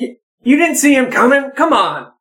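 reproachful, blaming, accusing tone, high and swooping. After a double take and checking his hip, Royal turns on G3, accusing tone. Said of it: "stare accusingly up at G3".

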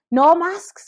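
loud, high, mock barked shout. Retelling what a passing lady shouted: imitating someone shouting. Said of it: "she literally shouted".

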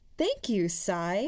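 said brightly, sunny, cheery tone. A woman at the tail end of a group thanks the narrator, brightly. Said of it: "Helen said brightly".

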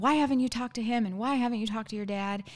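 mock screaming, put-on yell. Retelling a fight over a wedding, retelling a scream. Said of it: "he's screaming".

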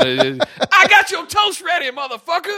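very high-pitched, with big swooping intonation. Picking a voice for a home assistant: Samuel L. Jackson voice. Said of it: "I immediately jump to Samuel L".

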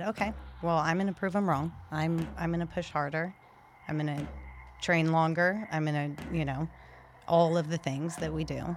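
usual speaking voice

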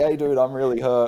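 put-on yelling. Retelling a shoulder injury, yelling back to Nick behind him, retelling own yell. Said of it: "And I'm yelling".

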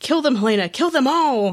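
high-pitched, eager yell. Speaker recounts their reaction to a tv scene, retelling a yell at the tv. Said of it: "I yelled".

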